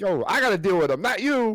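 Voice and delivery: angry high shout. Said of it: "Jason Kelce that was yelling at him".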